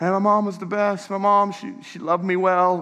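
acted tearful voice, speaking through crying. Retelling a man's words about his late mother: imitating someone crying. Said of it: "as he's crying".

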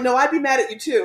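ordinary talk, nothing marked

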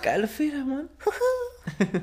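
weird comic voice. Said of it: "das ist diese komische Stimme".

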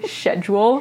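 'schedule' said with British pronunciation. Quoting how movie characters say the word, English accent on 'schedule'. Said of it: "they say it in an English accent".

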